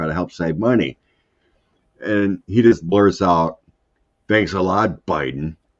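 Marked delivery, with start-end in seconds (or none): 4.3-5.5 mock sarcastic, mean, cutting tone. Retelling what he blurted out about gas prices: mock-sarcastic, mean. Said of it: "really mean, you know, sarcastically".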